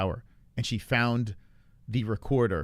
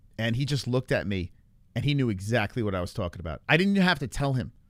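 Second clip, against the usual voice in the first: ordinary delivery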